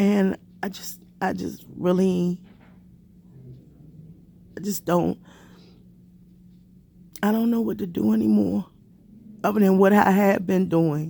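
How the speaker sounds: crying while talking. Speaking to viewers about fearing for the family's safety, crying while talking. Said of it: "I hate getting on here, you know, and crying".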